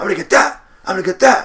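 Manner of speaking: repeated all-out screaming, very loud, shrill and booming. Film fan recounting the scene where Rocky yells at a departing man, imitating Rocky screaming. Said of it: "he keeps on screaming".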